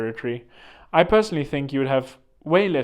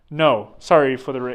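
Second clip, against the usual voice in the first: ordinary talk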